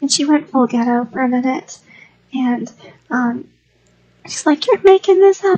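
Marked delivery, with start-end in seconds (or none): 4.6-5.6 put-on, high, loud, furious, angry screaming. Retelling how a wife reacted to being told what happened, imitating angry screaming. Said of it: "she just started angry screaming".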